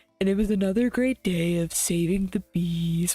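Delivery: a woman's voice. Imitating a woman from TikTok talking about saving bees: imitating a TikTok woman's voice. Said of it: "Why did she say it like that?".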